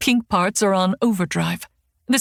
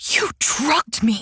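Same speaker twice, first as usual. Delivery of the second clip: screaming in a hushed whisper; 4 semitones higher than usual. Narrator accuses the man who drugged her, not wanting everyone to hear; whisper-scream. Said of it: "I whisper scream".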